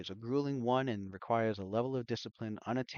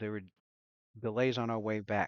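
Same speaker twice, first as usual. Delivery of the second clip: plain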